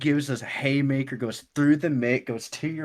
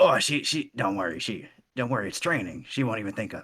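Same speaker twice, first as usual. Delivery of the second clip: devilish character voice; 3 semitones lower than usual. Replying to someone who refuses to knock out a friend, in a devil voice. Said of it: "great devil impression".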